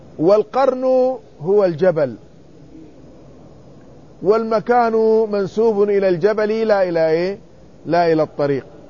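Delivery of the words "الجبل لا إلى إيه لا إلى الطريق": ordinary talk, nothing marked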